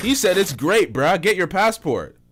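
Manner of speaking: play-acted, scornful, sarcastic, mocking tone. Reacting to a clip about living in Africa: sarcastic. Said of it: "the sarcasm here".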